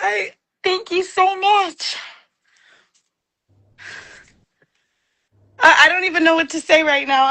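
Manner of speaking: nervous, shaking, trembling voice. Greeted as 'my love', thanking the other speaker, nervous and shaking. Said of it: "I'm shaking a little bit".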